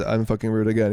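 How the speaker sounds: ordinary talk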